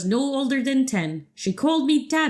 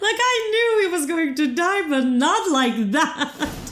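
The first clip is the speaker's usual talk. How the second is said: high, words breaking into laughter; 5 semitones higher than usual. Reacting to a character's sudden death in the game, laughing while talking. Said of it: "I shouldn't be laughing".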